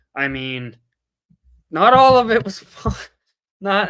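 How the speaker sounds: speech broken up by laughs throughout. Admitting a trip was not all fun: laughing while talking. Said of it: "I'm sorry for laughing".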